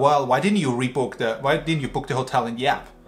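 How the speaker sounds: put-on snarky tone. Retelling what a hotline agent told them, imitating a snarky tone. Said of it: "she told us like with this snarky tone".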